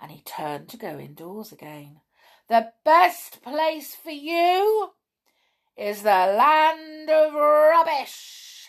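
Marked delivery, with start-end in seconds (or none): 2.5-8.7 loud, high, drawn-out shout stretching "you". Bron shouts at Grumpy as Grumpy turns to go indoors. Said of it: "shouted Bron".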